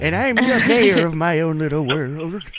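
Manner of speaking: put-on old-person voice. Replying to a co-host on the show, in an old person voice. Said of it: "my old person voice".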